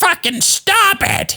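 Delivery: very high-pitched woman's squealing cry. Retelling a scene getting out of control, imitating a woman screaming. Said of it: "The women are screaming".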